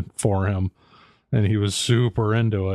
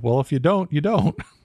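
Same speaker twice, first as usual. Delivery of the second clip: high little robot lady voice; 6 semitones higher than usual. Retelling what the phone unexpectedly answered, in Siri robot lady voice. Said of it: "this little robot lady voice go".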